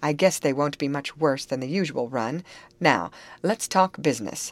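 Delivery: ordinary delivery, nothing marked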